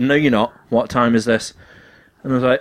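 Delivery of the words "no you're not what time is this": ordinary talk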